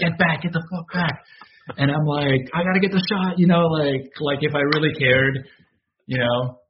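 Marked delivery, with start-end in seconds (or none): 0.0-1.2 mock shouting, pitched higher. Describing getting closer for a shot while police shouted at him, retelling cops shouting. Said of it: "shouting at me".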